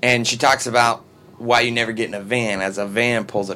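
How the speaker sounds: plain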